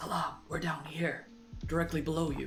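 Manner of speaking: quiet, hushed. Calling up to salam from directly below, in a hushed voice. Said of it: "like a hushed voice".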